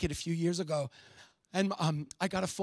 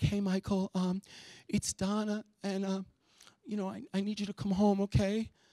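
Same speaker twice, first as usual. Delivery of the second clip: put-on tearful, upset crying voice. Retelling a sister-in-law's phone call asking him home: imitating someone crying on the phone. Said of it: "she's crying when I pick up the phone".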